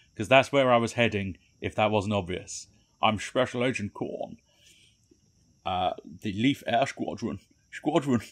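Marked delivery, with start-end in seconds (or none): 3.0-8.2 sh sounds pushed hard and missed. Reading a character's lines in a failed impression of Sean Connery. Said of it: "not a good impression of Sean Connery".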